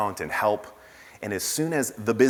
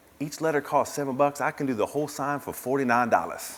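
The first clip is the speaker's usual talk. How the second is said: horrible, badly attempted put-on Arkansas accent; 5 semitones higher than usual. Retelling what a sign maker said to the store founder: horrible Arkansas accent. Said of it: "That's a horrible Arkansas accent".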